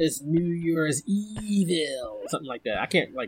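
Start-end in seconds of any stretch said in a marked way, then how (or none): 0.0-2.2 strange modulated voice-changer drawl, very slow. Quoting the phone caller from an early-80s film, New Year's Evil caller voice. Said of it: "with like the voice modulator and he'd be like".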